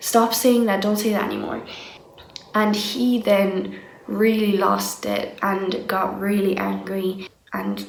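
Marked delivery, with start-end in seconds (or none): none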